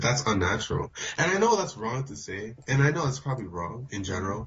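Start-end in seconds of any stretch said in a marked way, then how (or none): none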